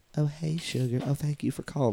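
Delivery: put-on girly playmate voice. Describing a Playboy playmate hosting a call-in show, in a girly Barbie-like voice. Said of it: "like real like girly like Barbie voices".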